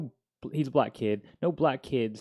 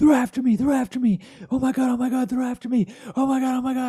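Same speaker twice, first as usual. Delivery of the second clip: put-on drunk, frantic, very high, loud, shrill panicked scream; 13 semitones higher, 8 dB louder than usual. Telling how a guy burst into the room, imitating panicked screaming. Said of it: "He's freaking out and he's just screaming".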